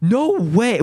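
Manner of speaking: voice breaking into a very high, cracking squeak. Spotting a tiny animated detail on screen, exclaiming with a voice crack. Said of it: "I have massive voice crack".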